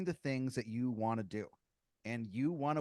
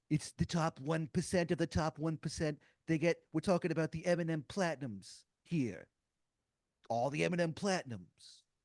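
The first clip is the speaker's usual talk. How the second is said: indignant, angry, ranting speechmaking delivery; 4 semitones higher than usual. Imitating a politician giving an angry speech: Bernie Sanders impression. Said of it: "he's like".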